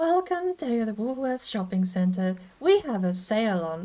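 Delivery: condescending, patronizing PA announcer voice. Demonstrating the supermarket announcement tone, condescending supermarket PA voice. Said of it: "condescending P A at the supermarket tone".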